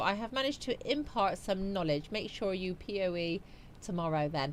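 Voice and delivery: ordinary talk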